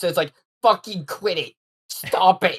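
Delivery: slow, angry, fed-up snapping tone. Retelling a story and acting out what Pokemon says, imitating Pokemon snapping. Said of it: "Pokemon just snaps".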